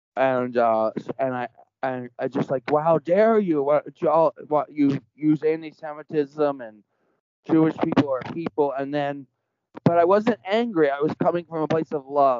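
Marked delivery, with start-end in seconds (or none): none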